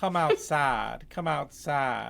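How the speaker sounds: seductive, slow, sultry southern drawl, possessed-sounding. Rating something, voicing a demon-possessed person in a sexy southern accent. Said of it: "sounds kind of sexy in a southern accent".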